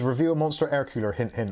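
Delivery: ordinary delivery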